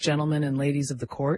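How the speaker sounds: ordinary delivery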